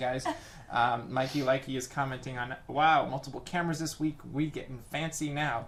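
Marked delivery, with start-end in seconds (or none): none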